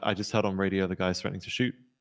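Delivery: plain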